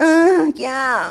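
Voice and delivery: loud, high put-on moan. Calling action after naming a moan assistant: mock moaning. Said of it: "Just moaning".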